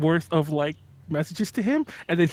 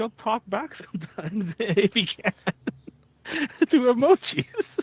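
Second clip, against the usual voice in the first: talking while laughing uncontrollably, higher; 5 semitones higher than usual. Explaining how someone answers through emojis, laughing while talking. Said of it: "I can't stop laughing".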